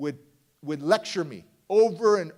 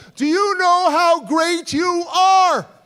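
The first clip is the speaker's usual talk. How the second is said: piercing shriek, very high, very loud, drawn out; 11 semitones higher, 9 dB louder than usual. Retelling a woman screaming at the speaker as he walks up to her, imitating her screaming. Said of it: "she screams one more time".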